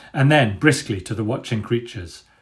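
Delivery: ordinary delivery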